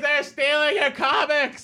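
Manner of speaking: high-pitched yelling, sounding off-mic and distant.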